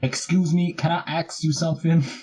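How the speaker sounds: high-pitched, sassy reporter voice with attitude. Retelling a sitcom bit to another speaker: Dee's sassy Puerto Rican reporter impression. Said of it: "her impression of a Puerto Rican reporter who's really sassy".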